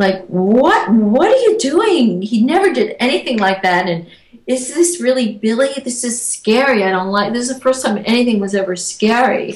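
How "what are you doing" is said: distressed and angry, slow, high and swooping. Recounting what was said to Billy after he laughed; retelling upset, angry words. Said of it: "I was so upset and angry".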